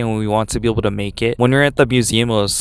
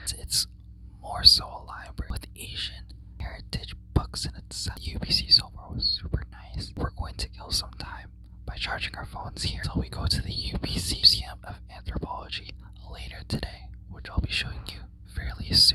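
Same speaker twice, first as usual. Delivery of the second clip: hushed whisper under the breath, very quiet; 13 dB quieter than usual. Giving a status update from inside a very quiet library, whispering. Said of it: "I'm whispering because it is extremely quiet".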